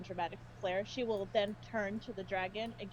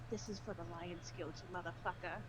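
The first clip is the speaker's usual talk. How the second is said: hushed half-whisper close to the ear; 2 semitones lower, 8 dB quieter than usual. Game narrator voicing a character slitting an enemy's throat, half-whispered. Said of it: "she whispers in her ear".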